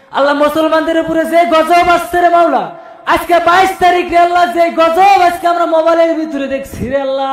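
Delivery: high, loud, impassioned, fervent pleading.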